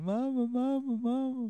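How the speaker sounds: put-on hillbilly voice. Describing a half-remembered show's hillbilly character, imitating a hillbilly. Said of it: "he has a stupid hillbilly with a fucking pilot's cap".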